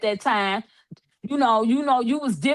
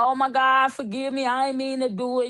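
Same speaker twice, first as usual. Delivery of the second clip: mock crying with pleading tone. Imitating criminals after the judge sentences them: imitating someone crying. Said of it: "Now you wanna cry".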